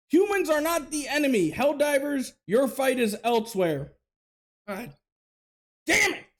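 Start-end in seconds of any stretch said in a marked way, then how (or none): 4.7-6.1 angry, fed-up, pissed-off exclamation. Reacting to a Helldivers message telling players to be respectful: angry outburst. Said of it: "So already you know I'm pissed".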